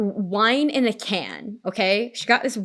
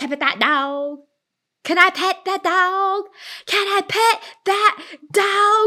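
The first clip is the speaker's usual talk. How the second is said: put-on high, intense little-kid voice building in intensity; 9 semitones higher than usual. Retelling a kid who mistakes a bear for a dog, imitating an intense little kid. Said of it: "every time I get to the third, like, most intense one".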